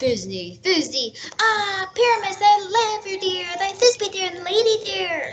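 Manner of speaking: high, small, monstrous little lady voice. An actor volunteers to play Thisbe too: Thisbe in a monstrous little voice. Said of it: "I'll speak in a monstrous little voice".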